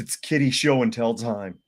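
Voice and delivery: ordinary talk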